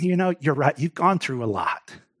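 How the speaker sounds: acted gentle, soft, understanding, empathetic, reassuring tone. In a message, imagining a figure speaking to the listeners: performing an empathetic voice. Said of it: "with an empathetic voice".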